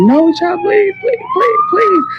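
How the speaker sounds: put-on, very high, swooping, rising screamed begging. Retelling a man threatening her at the balcony, retelling her own screaming. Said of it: "And I'm screaming like".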